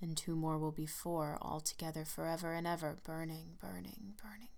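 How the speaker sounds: strange, sinking tone. Narrator reads a man speaking to the lovers after a long pause, voice lowering strangely. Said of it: "his voice lowering strangely".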